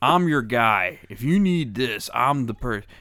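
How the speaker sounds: loud, slow, heavily coaxing tone. Imitating a lawyer's radio commercial for a friend: imitating John Morgan's cajoling commercials. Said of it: "they're so cajoling".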